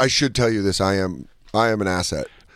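plain

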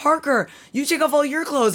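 all-out yelled screaming, acted out. Retelling what a kid screamed during the story, retelling a scream. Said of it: "And then he screamed".

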